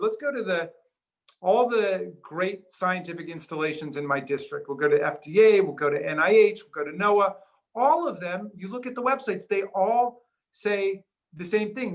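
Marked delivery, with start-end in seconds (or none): none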